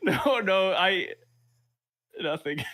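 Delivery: very slow, high words with stifled laughter. Brushing off a question about what was funny: stifling a laugh. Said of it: "Sai's hiding his laugh?".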